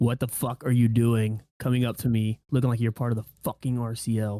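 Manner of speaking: very loud, menacing, threatening delivery. Asked to say the line menacingly into the microphone, menacing. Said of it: "say it menacingly into the microphone".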